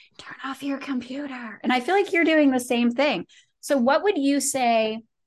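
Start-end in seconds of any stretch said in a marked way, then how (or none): 0.2-1.6 soft, quiet whisper. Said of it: "I feel like I'm whispering from the".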